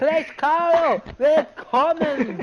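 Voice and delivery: exaggerated, high, loud, slow and drawn-out voice.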